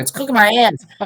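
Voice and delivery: high, irate, complaining shouted yell. Retelling a complaint from a caller about her car seat: imitating someone yelling. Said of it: "She's yelling at me".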